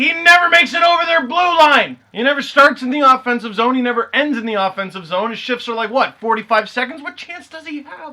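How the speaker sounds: screaming, loud, high-pitched yelling. Retelling what they yell at the TV about a player: retelling screaming at the TV. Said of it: "And I'm screaming at the T V".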